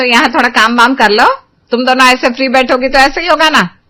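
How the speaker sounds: irritated, angry scolding tone. Telling two daughters-in-law to do some housework: angry. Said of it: "आप इतना गुस्सा क्यों कर रही हो?".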